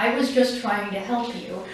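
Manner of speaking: ordinary talk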